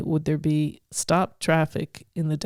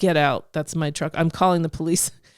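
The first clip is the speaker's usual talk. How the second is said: ordinary talk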